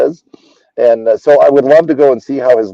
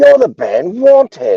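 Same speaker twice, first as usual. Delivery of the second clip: put-on very high, swooping, botched British accent; 12 semitones higher than usual. Retelling a guy off an elevator recognizing the band, in a bad British accent. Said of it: "with this great British accent, which I'm gonna murder".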